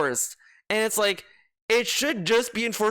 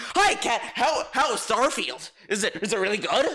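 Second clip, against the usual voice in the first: put-on mocking voice; 2 semitones higher than usual. Wondering how he talks to Cat, the speaker acts him out: mocking impression. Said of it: "does he like".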